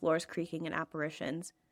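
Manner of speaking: ordinary delivery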